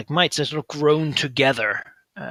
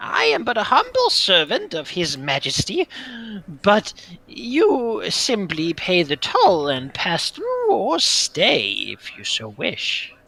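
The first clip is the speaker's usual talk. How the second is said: very light, high, swooping cackling voice; 6 semitones higher than usual. Voicing an echoing cave voice greeting the visitors: cackling in a very light voice. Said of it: "it continues".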